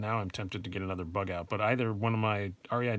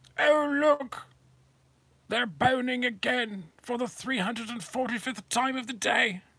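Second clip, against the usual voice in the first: high, slow, raised nature documentary narration; 5 dB louder than usual. Narrating knife boning like a nature documentary, David Attenborough impression. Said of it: "That's my David Attenborough impression".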